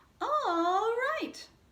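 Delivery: very high-pitched, loud voice. Telling a call-and-response joke, answering each twist of the story, high-pitched voice. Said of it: "you use a high-pitched voice".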